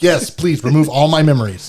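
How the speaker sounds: put-on cheerful, eager voice. Retelling a character's reply about losing his memories: imitating a smiling reply. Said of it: "smiling the whole time".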